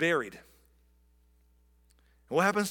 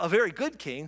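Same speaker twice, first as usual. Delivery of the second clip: usual speaking voice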